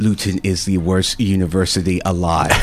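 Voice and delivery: ordinary delivery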